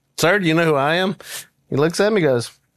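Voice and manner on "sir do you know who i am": usual speaking voice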